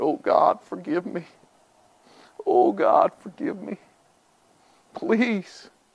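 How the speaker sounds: hushed, tearful whisper with weeping. Recounting bursting into tears while driving, the speaker re-enacts their prayer, retelling a tearful plea. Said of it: "I bust out in tears driving down".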